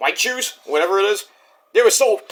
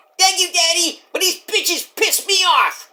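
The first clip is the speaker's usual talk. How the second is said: put-on bratty wrestler voice, higher; 11 semitones higher than usual. Doing a skit with a father character: Tiffany Stratton impression. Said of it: "doing Tiffany Stratton's impression".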